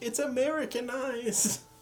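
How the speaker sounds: high, slow, exaggerated mock Spanish accent.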